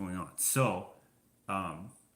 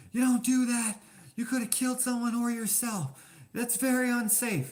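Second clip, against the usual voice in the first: mock very high, shrill, loud yell; 6 dB louder than usual. Retelling a lady yelling at the speaker, imitating someone yelling. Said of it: "So she's yelling at me".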